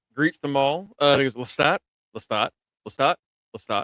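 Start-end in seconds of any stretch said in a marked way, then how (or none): none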